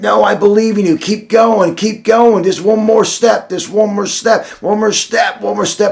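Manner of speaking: acted high nonstop yelling. Retelling how a coach urged on an exhausted crawling man, imitating the coach yelling. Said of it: "he's yelling the whole time".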